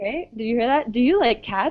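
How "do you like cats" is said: pitch climbing at the end on cats. Demonstrating yes-or-no question intonation, with rising intonation at the end. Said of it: "my voice goes up at the end again".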